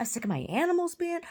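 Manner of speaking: play-acted, high, rising yelled-out voice. Recounting a fight with a woman over her vandalized car, retelling her own yell. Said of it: "What are you yelling about".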